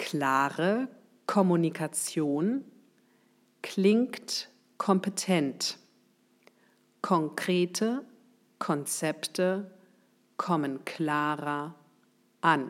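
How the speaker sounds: slow, careful, deliberate word-by-word dictation pace. Saying an example phrase so the listener can write it down, slow and careful. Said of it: "Ich sage es einmal langsam".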